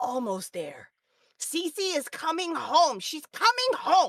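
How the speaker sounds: put-on very high, resolute, determined young girl voice. Voicing a young girl resting her head on her staff: determined eight-year-old voice. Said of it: "very, like, determined eight-year-old".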